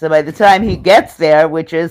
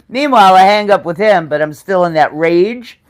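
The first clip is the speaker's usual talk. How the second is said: ordinary talk, nothing marked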